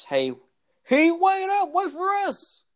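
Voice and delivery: very high, very slow, swooping, drawn-out calling yell. Voicing a character calling after others who run ahead: shouting. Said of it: "And he shouts".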